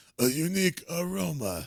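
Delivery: put-on elderly rat creature voice. Retelling a scene from the 90s movie, doing a Splinter voice. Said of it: "that's a Splinter voice".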